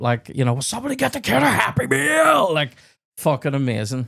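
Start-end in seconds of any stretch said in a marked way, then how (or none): 0.6-2.5 very high, raspy, rough meltdown yell. Retelling a film scene where Adam Sandler freaks out: imitating Adam Sandler freaking out. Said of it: "he freaks the bap".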